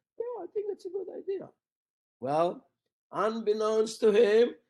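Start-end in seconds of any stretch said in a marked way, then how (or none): 0.2-1.5 timid, very shy, very high, soft voice. Retelling a colleague's reply to a suggestion to collaborate: imitating Steve Jones's very shy voice. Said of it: "in a very shy voice".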